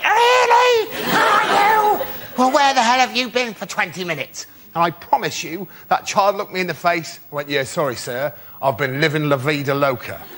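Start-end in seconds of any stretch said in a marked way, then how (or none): 0.0-4.5 furious, enraged, very high-pitched outburst. A teacher retelling confronting a child in class, retelling a furious outburst. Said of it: "I was furious".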